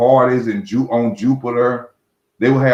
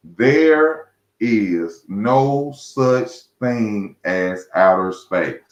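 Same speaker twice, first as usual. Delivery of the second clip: slow, deliberate, each word set down separately; 2 semitones lower than usual. Telling the people listening something plainly, said slow and deliberate. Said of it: "I'm gonna say this slow for people".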